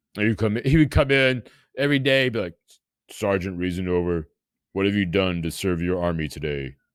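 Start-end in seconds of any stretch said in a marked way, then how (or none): 3.1-6.7 put-on big man's voice, pitched much lower. Retelling how a big man came in every day, imitating Bruce's deep voice. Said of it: "And he had the deep voice".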